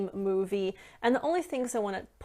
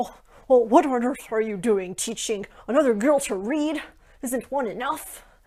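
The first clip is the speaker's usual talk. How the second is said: terrible put-on loud, snapping old-man voice; 3 semitones higher, 6 dB louder than usual. Retelling a movie scene where an older man snaps at Belle: bad impression of an older man snapping. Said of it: "terrible, terrible impression".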